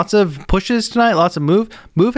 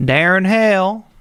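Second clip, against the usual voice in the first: put-on southern accent, higher pitched; 4 semitones higher than usual. Host reading out a name he always says a certain way, put-on southern accent. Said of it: "feel like saying that name with a southern accent".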